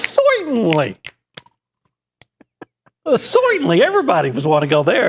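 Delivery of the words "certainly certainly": high voice with swooping, swinging pitch. Imagining the Three Stooges invited to the restaurant: Curly voice. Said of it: "And he'd go".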